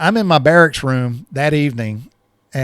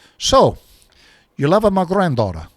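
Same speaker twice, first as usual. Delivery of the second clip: heavy put-on Italian accent, laid on thick; 3 semitones higher than usual. Retelling Frankie sitting him down when they ate, Frankie's heavy Italian accent. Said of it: "he just says in that heavy Italian accent".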